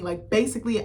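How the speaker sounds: ordinary delivery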